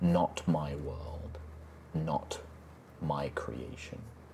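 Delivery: barely audible, very faint, slow whisper. Storyteller voices a presence the listeners hear in their minds, in very faint whispers. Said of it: "very faint whispers".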